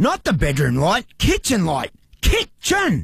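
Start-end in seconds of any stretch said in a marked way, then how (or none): 2.2-3.0 screaming, much higher pitch. Barry shouts at the smart lights he can't get to work: screaming. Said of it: "why are you screaming kitchen?".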